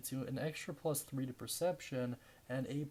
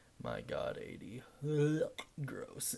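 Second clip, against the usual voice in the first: sarcastic, swooping, put-on revulsion. Reacting to reaching the eightieth episode: sarcastic mock disgust. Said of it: "I'm being a little bit sarcastic there".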